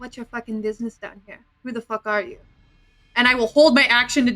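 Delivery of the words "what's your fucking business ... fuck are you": very quiet, hushed, menacing, threatening voice. Playing a character holding a grappled stranger: very quiet menacing voice. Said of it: "just very quietly say".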